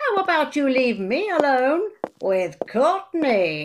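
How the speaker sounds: cheeky British puppet voice. Told to behave in the control room, the dummy Buster answers, British dummy voice. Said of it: "The roles of Chicagoan [name] and British ventriloquist dummy [name] are played by [name]".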